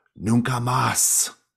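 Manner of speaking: loud, shrill, high bird-like raven cry. Narrator voicing a raven that cries out to a girl, crying out in raven voice. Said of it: "in its raven voice".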